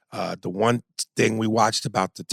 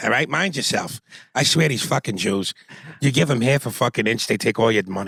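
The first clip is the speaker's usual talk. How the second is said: put-on Boston accent character voice. Doing the voice once the talk turns to Boston: Boston accent. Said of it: "I don't fucking do the voice unless you're talking about the real fucking Boston".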